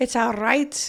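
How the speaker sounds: Scottish accent with trilled, rolled R in "right". Asked to say it again, the speaker repeats the phrase: scottish accent. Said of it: "that was really good".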